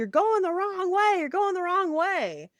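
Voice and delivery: very high, repeated screaming. Retelling a film scene where another driver warns them: imitating someone screaming. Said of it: "screaming at them".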